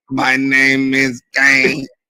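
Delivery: slow, drawn-out voice through a throat device. Mocking how the guest sounded on screen: Kane voice with throat device. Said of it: "he sound like Kane with the motherfucking thing".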